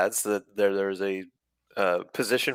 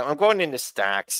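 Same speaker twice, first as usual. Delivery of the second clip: weaselly, pitched-up voice; 5 semitones higher than usual. Replying to praise of the impression: weaselly Jonah Hill voice. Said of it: "It's very weaselly".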